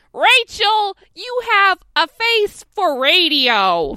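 very loud, very slow shrill yell, radio stretched out. Imagining how the line to Rachel would sound: Gilbert Gottfried voice. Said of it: "if Gilbert Gottfried had done it, he'd be like".

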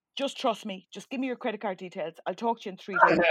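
ordinary delivery

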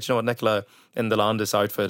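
normal talking voice

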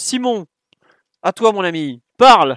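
high, very loud hollered call-out. Handing the floor over to a fellow commentator, yelling. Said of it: "Pardon, je hurle, je suis désolé".

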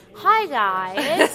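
clumsy fake American accent, very loud. Recalling greeting viewers in early tutorial videos: bad american accent. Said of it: "back then it was so bad".

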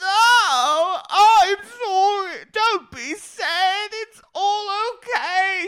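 put-on British accent. Retelling a reality show scene, imitating Karen in a British accent. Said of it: "she's just randomly in a British accent".

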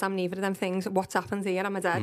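ordinary talk, nothing marked

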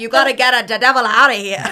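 exaggerated loud Italian accent. Reviewing a film, the speaker quotes its star's line: Russell Crowe's Italian accent. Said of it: "verge on a little Dolmio".

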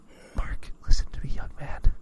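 put-on whisper. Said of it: "I'm whispering directly into your ear".

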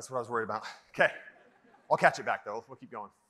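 talking winded while catching breath. Speaking on the mic to an event audience and promising to keep going, out of breath. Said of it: "Now I'm out of breath".

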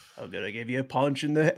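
put-on low, soft, muttered Australian accent.

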